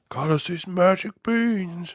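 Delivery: put-on husky cartoon mouse voice. Imitating how the Mickey voice sounded at this point: husky Mickey voice. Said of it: "a little husky Mickey voice".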